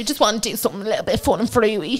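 Dublin accent, north side. Chatting with a partner who then praises the accent: Dublin Northside accent. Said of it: "That was your best Northside accent today".

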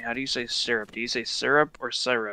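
plain

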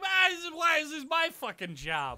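angry character voice. Voicing Vladdy as he is sent to fix the broken console, angry Vladdy voice. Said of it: "He squeaks up to it angrily and he's like".

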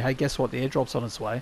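ordinary talk

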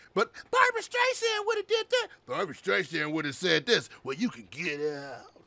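mocking imitation voice. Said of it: "I don't know why I'm using that voice".

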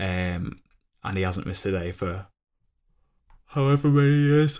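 speaking through a yawn. Describing someone's daily work habit, yawning while talking. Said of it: "I'm like yawning".

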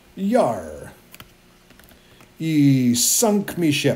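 very slow, drawn-out pirate voice. Showing the group what the boat will say: pirate speak. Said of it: "some sort of pirate thing".

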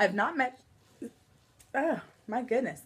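interrupted by hiccups. Talking to viewers in a video and breaking off mid-sentence, hiccuping.

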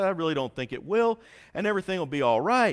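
ordinary talk

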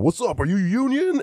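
mock yell, very high pitched. Retelling a stand-up joke line yelled at a stripper: retelling own yelling. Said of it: "I'm yelling at the stripper and I'm going".

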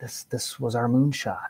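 imitated hushed tones. Retelling what scientists said on the phone: imitating hushed tones. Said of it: "very hushed tones on the phone".

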